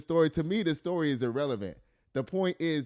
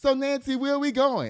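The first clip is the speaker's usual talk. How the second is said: mock breezy, cheerful, light, jovial, pitched up; 10 semitones higher, 4 dB louder than usual. At three, speaking while his mom brushes his hair, retelling a jovial remark. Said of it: "I just said it all jovial".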